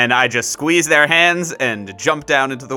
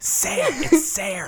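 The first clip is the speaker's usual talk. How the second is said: soft, hushed whispered aside in character; 12 semitones higher, 5 dB quieter than usual. Whispering in character to another party member: whispering in character. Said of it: "I whisper to Reagan".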